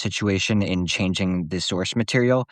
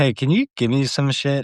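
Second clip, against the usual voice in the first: play-acted loose, half-drunk voice, pitched up; 5 semitones higher than usual. Imitating a character walking up to Rhaenyra: imitating a tipsy Ulf. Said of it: "kinda fucking tipsy".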